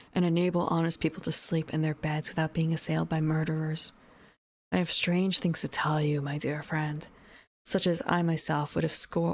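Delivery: plain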